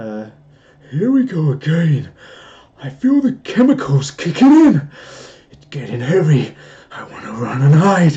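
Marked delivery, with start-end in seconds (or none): 0.9-8.2 half-scared, half-evil villain voice, loud and swooping. Trying a line again on request, not high, just an evil voice. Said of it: "just an evil voice".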